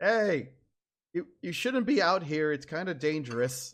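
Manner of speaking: loud, shouted, yelled voice. Narrating a game, the speaker voices someone calling out in Dwarven: yelling. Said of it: "them start yelling".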